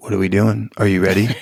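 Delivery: upset voice dropped low. Showing how a coach speaks to a class when upset: upset, voice dropped low. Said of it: "when I am upset, it drops back down".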